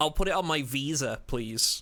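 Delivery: imitated American accent. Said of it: "with an American accent".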